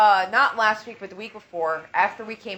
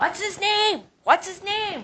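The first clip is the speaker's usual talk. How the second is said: very high, shrill, repeated put-on woman's yelling; 12 semitones higher than usual. Retelling how a woman at camp came running over: imitating a woman yelling. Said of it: "yelling at me".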